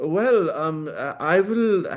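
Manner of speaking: put-on French accent. Retelling a TV interview answer, imitating Stéphane Bancel's French accent. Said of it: "he has this French accent".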